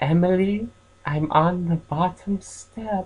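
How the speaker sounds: gentle, soft, high little doll voice. Storyteller voicing an old doll speaking to Emily: soft doll voice. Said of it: "I'll just make it soft".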